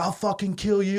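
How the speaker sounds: high, loud, yelled, threatening tone. Retelling a fight, quoting a punched guy threatening: imitating someone yelling a threat. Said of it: "he starts yelling at this guy".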